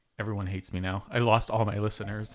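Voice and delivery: ordinary talk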